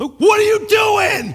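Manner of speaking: full-blown, shrill, very high, very loud yell. Retelling yelling at a character while reading scripture: retelling own yelling. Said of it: "I literally started yelling at this guy".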